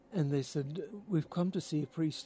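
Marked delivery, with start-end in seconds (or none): 1.0-2.2 strong, thick, put-on Irish accent. Retelling what visitors from ireland said to the priest, heavy irish accent. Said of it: "in heavy Irish accents".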